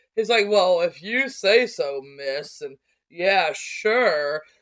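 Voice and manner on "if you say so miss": very slow, drawn-out, unimpressed sarcasm. Recounting a story they wrote, speaker voices a man answering a woman, sarcastic. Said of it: "He's very sarcastic through this".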